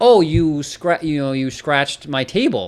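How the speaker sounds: mock indignant, mad, scolding, blaming tone. Speaker acts out an upset woman accusing them of scratching her table, mock-angry. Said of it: "Like she was all mad".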